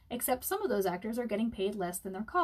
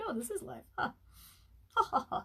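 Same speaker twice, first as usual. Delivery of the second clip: mock speech rolling straight into ha ha laughter; 3 semitones higher than usual. Doing an impression of a viewer named Adrian talking and laughing: imitating Adrian laughing. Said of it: "That's my Adrian impression".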